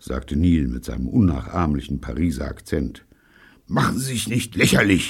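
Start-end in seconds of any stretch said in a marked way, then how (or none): 3.7-5.1 grouchy grumbling, a touch higher. Pycroft answers Neil, alone with him and a revolver, grumbled. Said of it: "murrte Pycroft".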